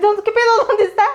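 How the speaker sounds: high-pitched, loud, alarmed cry.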